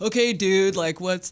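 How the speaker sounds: slow, easy put-on California accent drawl. Imagining a california person doing the training: imitating a california accent. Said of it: "a California person was doing that".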